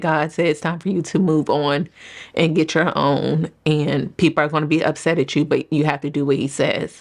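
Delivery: ordinary delivery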